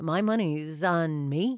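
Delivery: ordinary delivery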